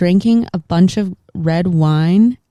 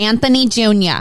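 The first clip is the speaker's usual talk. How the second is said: higher-pitched, put-on New Jersey mom voice; 4 semitones higher than usual. Doing a second requested impression: Carmela Soprano voice. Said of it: "the mom from The Sopranos".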